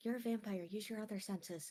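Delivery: soft mutter murmured under the breath. Stepping close to the vampire, she speaks to him in Elven, said under her breath. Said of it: "say under her breath in Elven".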